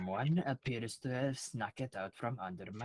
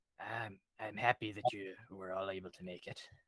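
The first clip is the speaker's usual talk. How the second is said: low, hushed, quiet half-whisper; 4 semitones lower, 4 dB quieter than usual. As the cloaked gentleman who never raises his head, greet the group: quiet half-whisper. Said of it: "he whispers quietly".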